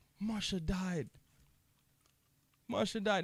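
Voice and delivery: sobbing, tearful crying in a high voice. Retelling mom telling a child someone died: imitating mom crying. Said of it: "And she's crying".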